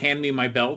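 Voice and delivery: ordinary talk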